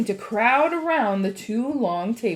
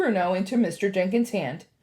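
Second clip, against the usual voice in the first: usual speaking voice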